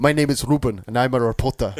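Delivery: put-on thick, heavy South African accent. Speaker quoting a game trailer stuck in their head, in a thick south african accent. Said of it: "with this thick South African accent".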